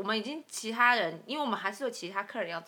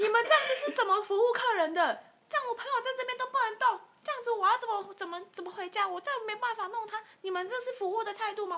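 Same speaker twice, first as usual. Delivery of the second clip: put-on shrill, very high, sudden shouting; 11 semitones higher than usual. Retelling how a man at a bar, his friend lying on the floor, yelled; retelling a sudden yell. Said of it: "他就突然这样子大叫说".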